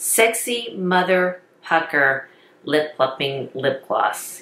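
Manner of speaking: very slow, drawn-out, careful enunciation, word by word. Reviewing lip plumpers, trying the product name again really slow. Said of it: "I'm going to have to say it really slow".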